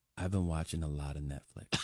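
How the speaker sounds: soft, low-volume, hushed stage whisper. Retelling what someone leaned down and said in their ear: imitating a half-whisper. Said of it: "he whispers in my ear so that nobody else can hear".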